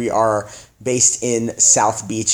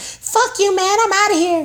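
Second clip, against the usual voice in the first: put-on very high voice of a 12-year-old kid. Speaker acts out a young person quitting a job, in a 12-year-old kid's voice. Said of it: "It's like some 12-year-old kid's voice".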